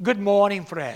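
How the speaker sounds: put-on low Irish-accented voice. Recalling Bible school, speaker quotes a man's hallway greeting in Jim McGuigan's deep Irish accent. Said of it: "he said to me in his deep Irish accent".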